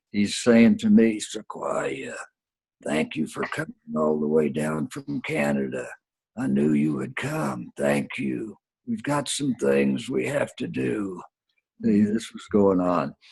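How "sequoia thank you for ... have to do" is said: very raspy, hoarse, soft, rasping voice. Retelling what a man said in greeting, in a very raspy voice. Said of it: "in a very raspy voice".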